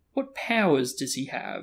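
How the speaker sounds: ordinary delivery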